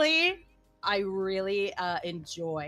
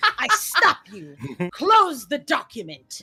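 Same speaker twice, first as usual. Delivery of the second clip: playful mock commanding spell-casting voice; 3 dB louder than usual. Stopping another speaker from reading a bad ending: mock commanding, like casting a spell. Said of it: "you were commanding, like you were casting a spell".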